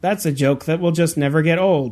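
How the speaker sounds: ordinary delivery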